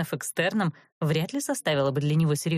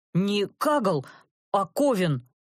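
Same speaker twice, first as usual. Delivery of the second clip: very slow, affronted, indignant delivery; 4 semitones higher than usual. Reading a man's retort to a woman's taunt, indignantly. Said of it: "возмущенно".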